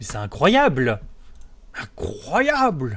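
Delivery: swooping, animated-film cartoon superhero voice. Streamer annoyed at a wrong Twitch category, trying a Mr. Incredible voice. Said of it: "J'essaye de faire la voix de Monsieur".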